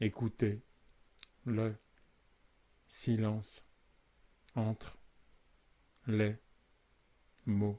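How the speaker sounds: halting, with pauses breaking between words. Talking about the silence between words, slowing diction with pauses between words. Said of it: "si je ralentis ma diction".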